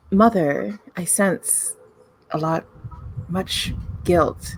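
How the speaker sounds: tender, gentle, very high-pitched concerned voice. Game narrator voicing a character who speaks to Penance, soft voice. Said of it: "they say in a soft voice".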